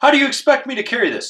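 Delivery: very high, shrill screaming voice. Retelling a confrontation where a man kept screaming at them: imitating a man screaming. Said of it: "he's just screaming at me".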